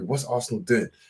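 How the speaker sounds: normal talking voice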